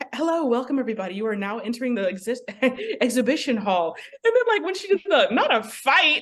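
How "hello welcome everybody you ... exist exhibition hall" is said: polished customer-service announcer voice, intercom style. Imitating the woman on an exhibition intercom, customer-servicey intercom voice. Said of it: "she had this like very like customer servicey voice".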